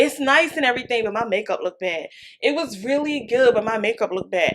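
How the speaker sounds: ordinary talk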